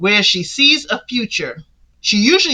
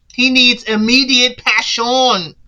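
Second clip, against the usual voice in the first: put-on French accent; 2 semitones higher than usual. Retelling what a man says about a woman, in a put-on French accent. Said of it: "Why am I putting on a French accent?".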